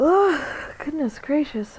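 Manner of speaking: words said mid-yawn, through a yawn. Calling it for the night and apologizing for yawning: yawning while talking. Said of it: "I'm sorry I keep yawning".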